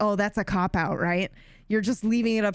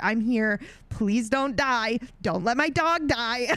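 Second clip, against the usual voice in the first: begging through tears, tearful crying voice; 4 semitones higher than usual. Retelling a moment in a game when a dog was shot: retelling own crying plea.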